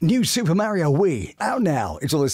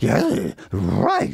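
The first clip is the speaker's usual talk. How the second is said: low-pitched cartoon dog character voice; 4 semitones lower than usual. Showing how the cartoon voices are performed: Scooby-Doo voice. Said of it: "perform the voice of Scooby-Doo".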